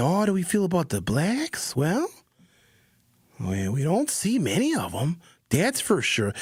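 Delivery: put-on thick, heavy, sing-song Wisconsin accent. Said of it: "He had that heavy Wisconsin accent".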